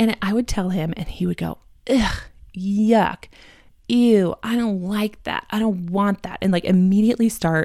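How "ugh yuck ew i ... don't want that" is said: put-on slow, upset, grossed-out toddler voice. Imitating a son refusing the dinner being made: imitating an upset child. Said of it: "your child is very upset".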